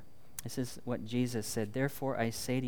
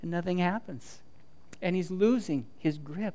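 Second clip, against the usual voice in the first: usual speaking voice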